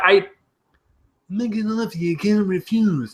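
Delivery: throaty hawking voice, tongue rolled back, as if something stuck. Trying an impression after describing how it is done, throaty hawking-up voice. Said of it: "as if like you're trying to hawk something up".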